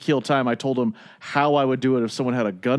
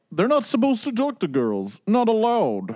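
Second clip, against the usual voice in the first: bad, clumsy put-on Russian accent, high and sing-song; 9 semitones higher than usual. Retelling what a guy said to them, in a bad russian accent. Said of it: "I don't do a good Russian accent".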